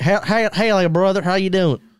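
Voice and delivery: put-on Texan accent. Asked to hold a back-and-forth conversation in an accent, greeting a partner: texan accent. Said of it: "in that accent".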